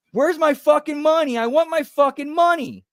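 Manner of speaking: shrill screaming, very high and loud. Retelling hearing someone in the crowd screaming: imitating someone screaming. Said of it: "I hear somebody start screaming".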